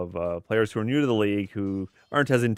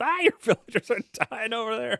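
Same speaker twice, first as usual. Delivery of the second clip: mock very high-pitched shrill screaming. Commentating a game, imitating a player screaming at a teammate: imitating someone screaming. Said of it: "he's screaming at her like".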